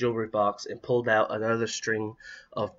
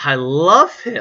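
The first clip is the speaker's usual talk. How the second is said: very loud, joyful, happy cry; 4 semitones higher, 10 dB louder than usual. A girl answers her dad, who asks if she likes the new dummy, crying happily. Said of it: "Kris cried happily".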